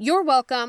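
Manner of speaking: ordinary delivery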